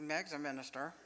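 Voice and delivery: soft, quiet sideways aside voice. Retelling what her cousin standing behind her said, in a soft, sideways voice. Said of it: "but in a soft, sideways voice".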